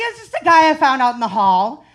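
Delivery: mock dripping sarcasm, loud and swooping. Retelling a reply to a doctor: retelling a sarcastic reply. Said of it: "The sarcasm in me is boiling over".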